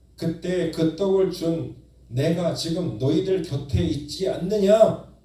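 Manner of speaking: loud, drawn-out cry. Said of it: "이렇게 외치고 계시는 것입니다".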